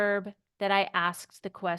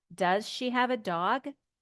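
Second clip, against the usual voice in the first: rising pitch on final word "dog". Teaching how to ask a yes-no question, rising pitch on 'dog'. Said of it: "our voice will go up".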